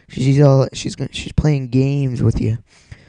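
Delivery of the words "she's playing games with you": ordinary talk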